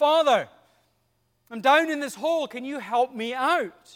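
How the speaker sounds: loud calling voice.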